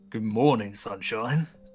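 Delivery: very deep voice. Greeting a captive who just woke up: very deep voice. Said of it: "A very deep voice".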